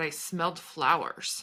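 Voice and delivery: ordinary talk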